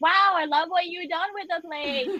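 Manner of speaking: loud, fast, high, exaggerated delivery projected to the room. A player's character walks quickly into a building, speaking to everyone, loud. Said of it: "I walk in very quickly and loudly".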